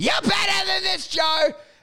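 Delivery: play-acted shrill, very high drunken shout. Retelling how a drunk friend heckled while carried out: imitating a drunk friend yelling. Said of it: "he's yelling".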